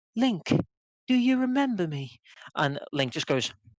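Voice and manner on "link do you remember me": very high-pitched, put-on British accent. Gamer recapping the final cutscene, quoting Zelda: fake British Zelda voice. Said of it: "with her annoying fake British accent goes".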